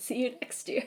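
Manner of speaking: breathy voice with a voice crack. Signing off, thanking viewers and listeners: voice cracking. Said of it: "My little voice crack".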